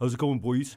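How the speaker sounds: clenched-jaw, easy, casual delivery. Imitating the speaker's brother, who always has a beer: Steve's tight-jawed voice. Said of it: "that sort of tight jaw kind of thing".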